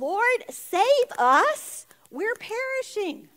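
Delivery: high, loud panicked shouted cry.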